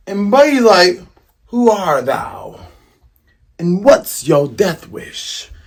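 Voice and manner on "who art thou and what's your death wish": slow, pompous, lofty, high-and-mighty tone. Retelling the confrontation, playing Buggy answering his challenger, imitating Buggy all pompous. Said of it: "talking all pompous".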